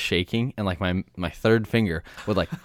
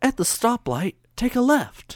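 weird put-on voice-assistant voice, pitched higher. Retelling what the map app says at stop signs: bad Siri impression. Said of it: "that was a bad Siri impression".

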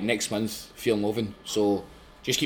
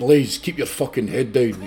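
crazed, loud, mad put-on biker voice; 2 semitones higher, 5 dB louder than usual. Speaker quotes a man as they arrived at the gate: mad biker voice. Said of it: "in his mad biker voice".

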